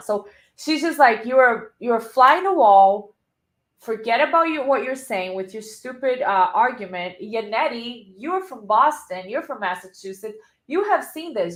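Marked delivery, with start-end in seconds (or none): none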